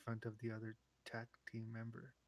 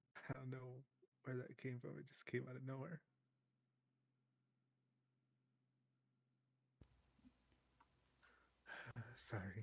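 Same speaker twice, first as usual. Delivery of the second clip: teary and quieter; 5 dB quieter than usual. Talking to a coworker who may leave for another team, teary. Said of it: "Wipes her tears".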